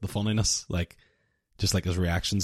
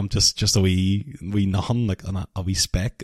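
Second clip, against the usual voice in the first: ordinary delivery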